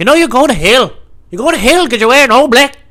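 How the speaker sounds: put-on shrill, booming, very high, very loud Irish-hillbilly mix accent. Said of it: "I can't do an Irish accent".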